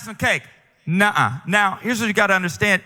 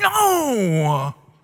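put-on sulky, pouting toddler voice with attitude. Retelling a three-year-old refusing after being told no: imitating a pouting toddler. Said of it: "he's pouting, he's got attitude".

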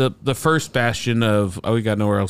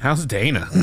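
sarcastic, mocking delivery. Showing how to ask about someone's mom: sarcastic. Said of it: "You sarcastically say her name".

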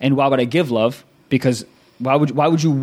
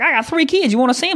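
nice, chatty, very high, all-sweetness voice; 13 semitones higher than usual. Acting out the really nice woman at a phone store: LaCroix Johnson voice. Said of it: "that's LaCroix".

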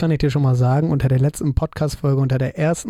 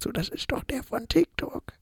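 hushed, very quiet whisper; 10 semitones higher, 10 dB quieter than usual. Speaker retells what people who recognized him said, imitating a very quiet remark. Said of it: "ganz, ganz leise gesagt".

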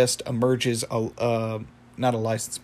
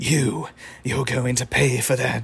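put-on British accent, old wizard voice, much slower. Speaker retelling a scene where an old wizard confronts Rigby, British accent old wizard. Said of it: "I don't know why I gave him a British accent".

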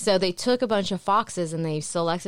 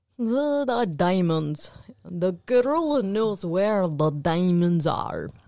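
terrible fake Romanian accent, drawn-out "the". Speaker mocks the worst movie accent ever: Tim Curry's bad Romanian accent. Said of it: "It's the worst accent ever".

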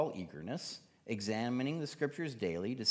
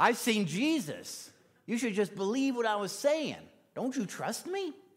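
put-on laid-on New York accent, pitched up high; 10 semitones higher, 4 dB louder than usual. Imagining what Paul never said to the people: Paul with a New York accent. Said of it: "why Paul has a New York accent".

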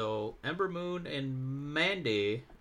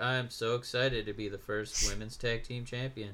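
put-on flat, unexcited voice; 3 semitones lower than usual. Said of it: "Sasha Banks did that a lot, where she would come out and be like".

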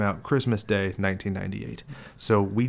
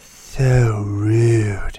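very loud, sassy, put-on sultry voice; 10 dB louder than usual. Imitating a character's line from a film: sultry, sassy put-on voice. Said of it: "That's her when she starts having sass and attitude".

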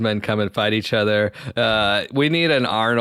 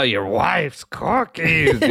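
monster voice, pitched higher and slower; 5 semitones higher than usual. Recalling a character's line from the film, Cookie Monster voice. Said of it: "I sound like the Cookie Monster there".

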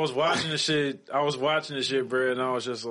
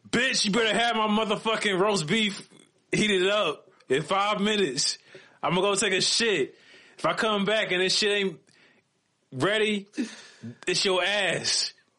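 play-acted belligerent, angry drunk man, pitched up; 8 semitones higher than usual. Acting out a bad crime-show reenactment of an angry drunk husband: mock angry drunk husband. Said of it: "he was not happy that his wife didn't have dinner ready".

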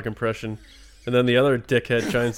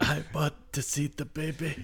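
slow, drawn-out documentary narrator voice; 4 semitones higher, 8 dB quieter than usual. Doing a Mandalorian line that comes out like Werner Herzog. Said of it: "Every fucking impression I do is just Werner Herzog".

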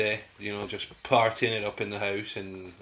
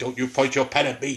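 put-on young man's voice; 4 semitones higher, 4 dB louder than usual. Telling the other speaker off about a pen, imitating the son's voice. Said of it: "I was doing your voice".

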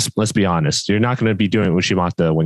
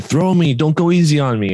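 put-on loud, pitched-up old man voice, yelling; 8 semitones higher than usual. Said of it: "he was yelling at the guy".

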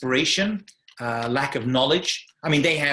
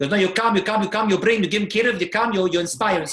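thick put-on Yiddish accent, much higher pitch; 6 semitones higher than usual. Quoting someone's reply to the speaker, in a thick yiddish accent. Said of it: "with a very thick, heavy Yiddish accent".

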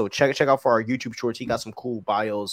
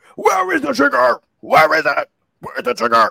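very loud, high, raspy growl; 13 semitones higher, 8 dB louder than usual. Wrapping up his video, the host offers viewers the worst Batman voice. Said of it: "Let me talk in the worst Batman".

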